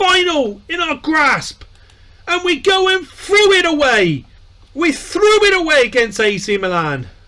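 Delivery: severely angry rant, very high and swooping. Reacting to losing a cup final against ac milan: angry. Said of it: "I'm so severely angry right now".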